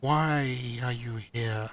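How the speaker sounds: faint, disembodied voice from everywhere, why drawn out. Storyteller voicing a voice that questions the listeners, faint voice from all around. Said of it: "you hear a faint voice that seems to just come from all around".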